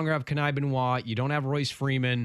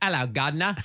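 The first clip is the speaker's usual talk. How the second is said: offhand put-on mock English accent. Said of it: "What word do you go with for an English accent".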